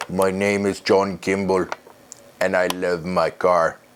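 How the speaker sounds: bad, clumsy put-on Austrian accent. Quoting Kindergarten Cop, bad Arnold Schwarzenegger Austrian accent. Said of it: "that was a horrible impression of Arnold Schwarzenegger".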